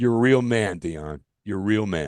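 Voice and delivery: put-on sarcastic tone. Retelling a baseball broadcaster's reply after being doused with water: imitating a sarcastic remark. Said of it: "he said that sarcastically".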